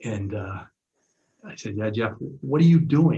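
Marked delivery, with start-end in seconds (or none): 2.4-3.2 loud, raised yelling scream. Speaker retelling how he yelled at Jeff after calling a timeout, retelling a scream. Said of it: "And I started screaming".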